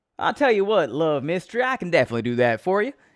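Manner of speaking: loud, twangy Texas accent. Asked to do the accent of the listener's home state, answering in a twangy Texas accent. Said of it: "can you do the accent of my home state, Texas?".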